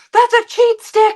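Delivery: very loud, shrill, high-pitched booming holler. Telling a drink story, quoting the bartender yelling across the bar. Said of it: "yelling from the other side of the bar".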